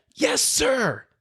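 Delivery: instant, full-volume, very high-pitched yell. Recalling answering a man who yelled a question at the speaker: retelling a yell at full volume. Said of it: "at the top of my lungs".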